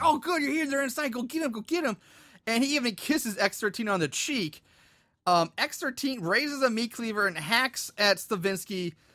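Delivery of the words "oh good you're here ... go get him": mock excitement, pitched higher. Retelling a movie scene, quoting a character greeting a killer: imitating someone excited. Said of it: "He's so excited".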